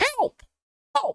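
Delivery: tiny, squeaky, very high-pitched cry. A narrator voices someone calling for help from the depths of a hole: squeaky, high-pitched voice. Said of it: "You hear a squeaky, high-pitched voice emerge from the depths".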